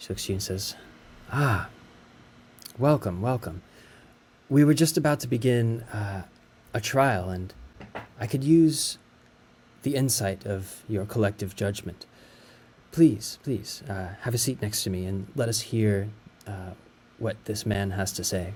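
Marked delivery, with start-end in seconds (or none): 1.3-18.5 calm, firm, slow, clear, authoritative judge-like voice. Voicing a judge welcoming the initiates to a trial: clear, authoritative voice. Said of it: "She speaks in a clear and authoritative voice".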